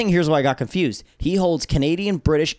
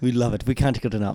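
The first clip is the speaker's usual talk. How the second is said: low, put-on British accent. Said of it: "Was that British?".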